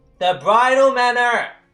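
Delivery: shouting. Repeating an answer to someone who says they can't hear, yelling. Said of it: "You don't need to yell".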